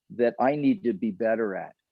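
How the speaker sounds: ordinary delivery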